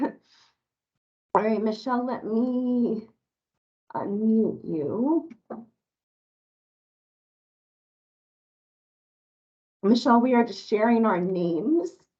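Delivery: hoarse, voice giving out. Greeting meeting participants while fighting a cough: hoarse, losing voice. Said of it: "I'm losing my voice".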